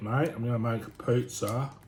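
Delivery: put-on Australian accent. Speaker about to make pizza: best aussie accent. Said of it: "my best Aussie accent".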